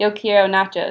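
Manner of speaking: put-on American-accented Spanish. Recounting Luciana tapping them on the shoulder during quiet prayer, imitating Luciana's North American accent. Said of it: "in a very North American accent".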